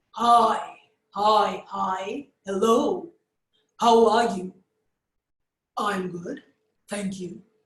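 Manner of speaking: loud, low, deep bass from the diaphragm. Demonstrating a voice originating low from the diaphragm for learners: a bass voice. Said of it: "a bass voice".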